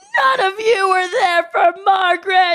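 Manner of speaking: very high, very loud, shrill screaming. Retelling the group home owner's outburst, imitating her screaming. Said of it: "and she starts screaming".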